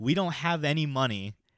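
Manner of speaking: slow, deliberate yelling, word by word. Retelling standing up to a guy on a train: imitating own yelling. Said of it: "yelling at him in his face".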